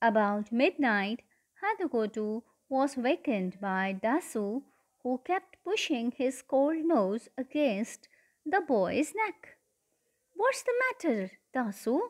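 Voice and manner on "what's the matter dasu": drowsy, half-awake, sleepy, slightly pitched up. Woken at midnight by his dog nudging him, the boy asks sleepily. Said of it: "he asked sleepily".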